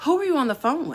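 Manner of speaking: quick, with a tinge of sarcasm. Retelling what she asked after the speaker got scammed, mimicking her sarcastic tone. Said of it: "a little tinge of sarcasm on every word".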